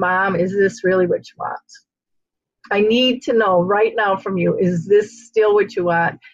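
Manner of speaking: acted-out tearful, crying, begging tone. Speaker recounts pleading with their sleeping mother, holding her hand, retelling a tearful plea. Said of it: "holding her hand, crying, going".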